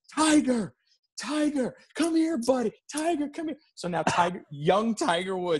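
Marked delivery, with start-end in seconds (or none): 0.2-3.6 shrieking call, very high, screaming. Telling a story about meeting Tiger Woods, retelling someone screaming. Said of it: "he starts screaming".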